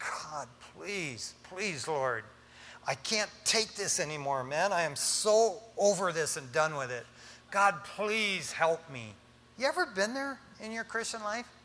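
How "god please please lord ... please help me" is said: acted, slow, desperate pleading cry. Speaker addresses listeners, voicing someone in hardship crying out: acting out crying out to god. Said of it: "you're crying out and just going".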